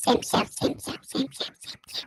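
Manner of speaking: soft, unvoiced, echoing whisper.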